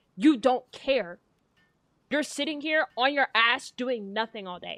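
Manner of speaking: mock-furious scolding voice. Retelling an argument, the speaker acts out what she yelled at them: imitating an angry rant. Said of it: "she got so pissed off".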